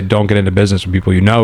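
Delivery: ordinary talk, nothing marked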